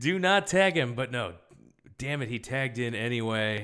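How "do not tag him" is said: put-on scream, pitched higher. Retelling watching a match and screaming at the screen: retelling own screaming. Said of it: "and I'm screaming".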